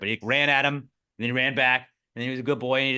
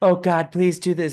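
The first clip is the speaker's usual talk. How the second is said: showy, theatrical, put-on solemn delivery; 5 semitones higher, 6 dB louder than usual. Retelling a woman filmed near a gorilla: mocking a woman's showy prayer. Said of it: "she just starts doing this prayer thing".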